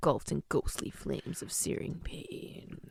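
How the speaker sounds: low, unvoiced, hushed, eerie dramatic whisper.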